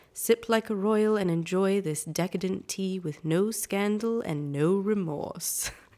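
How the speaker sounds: put-on British accent, read aloud advert style. Reading a tea label aloud on request: put-on british accent. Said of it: "would you like me to read this in a British accent?".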